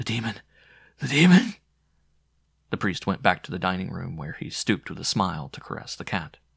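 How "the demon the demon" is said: raspy, hoarse, high-pitched mutter. A narrator reads an old maid repeating her words, hoarse mutter. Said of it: "mutter in a hoarse voice".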